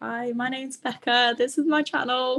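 high, slow, nervous-sounding delivery. Retelling the intro of a first video: imitating own nervous past self. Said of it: "I am so nervous on it".

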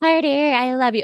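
put-on high baby voice. Imitating how Paris Hilton talks on her show: Paris Hilton baby voice. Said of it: "that baby voice".

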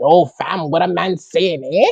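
put-on crusty Toronto slang accent. Describing how some Toronto guys sound, imitating crusty Toronto slang voice. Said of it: "It's crusty, like".

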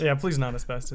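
ordinary delivery

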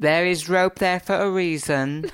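loud shouting. Retelling how Chelsea told off tourists: imitating Chelsea shouting. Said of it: "Chelsea was shouting at people going".

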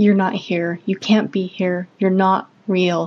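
hissing through clenched, gritted teeth. First-person narrator confronting a smiling, vicious figure, hissed through clenched teeth. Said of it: "I hissed at him through clenched teeth".

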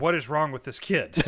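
plain

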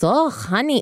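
mock thick German accent. Retelling what a grandmother said about her frozen credit cards: imitating grandmother's thick German accent. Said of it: "I can't do the accent".

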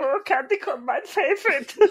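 put-on very high, squeaky, silly German accent. Explaining a silly bit from earlier, the speaker does a German accent. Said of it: "doing a German accent".

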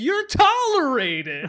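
big, very loud, swooping, comic shouted delivery. Imagining how someone said a line on set: imitating a funny delivery. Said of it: "I bet he also said it in a very funny way".

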